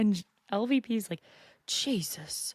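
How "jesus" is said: put-on one word in Oklahoma accent. Retell LVP's reaction to the Xanax talk, with LVP's British accent turned Oklahoman. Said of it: "why my British accent turned Oklahoman".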